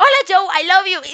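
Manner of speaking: loud voice, grinning ear to ear. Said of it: "Y sonreía así rajado".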